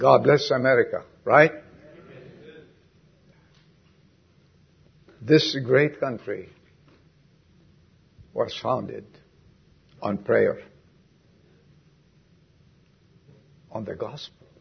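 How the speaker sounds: crying while speaking. Beginning an introduction at a meeting, crying while speaking. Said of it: "I'm already crying".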